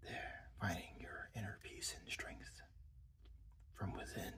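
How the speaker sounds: soft, whispery, calm meditation voice. Narrating Leo meditating in his Zen mode, in a whispery voice. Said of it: "you just gotta talk in a whispery voice".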